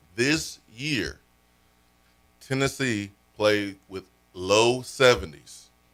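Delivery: very slow, deliberate, drawn out, each word spaced apart. Addressing Willard, promising to say it really slow: very slow and deliberate. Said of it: "I'm going to say this really slow".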